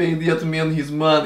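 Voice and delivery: very bad put-on Russian accent. Discussing accents, speaker recalls a movie line, John Malkovich's bad Russian accent. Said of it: "the worst Russian accent I've ever heard".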